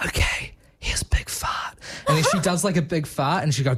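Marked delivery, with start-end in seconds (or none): 0.0-1.8 quiet, slow whisper. Retelling a video where a man's Alexa whispers back: imitating Alexa whispering. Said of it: "she whispers back and she's like".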